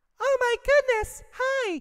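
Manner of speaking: voice pushed very high, very slow and drawn out. Showing that they can speak really high, in a really high voice. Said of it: "I can speak really, really high".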